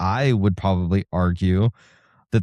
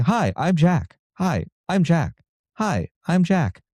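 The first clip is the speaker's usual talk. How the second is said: high, canned, looping delivery, repeated identically, pitched up; 8 semitones higher than usual. Retelling a training video whose AI voice kept repeating itself: imitating Jack's repeating voice. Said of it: "a voice that just kept saying".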